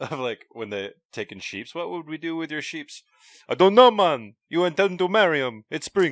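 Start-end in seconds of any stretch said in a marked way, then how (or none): 1.7-6.1 put-on Jamaican accent, pitched up. Quoting a Viking's line from the script, in a Jamaican accent. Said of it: "do a Jamaican voice for our Viking".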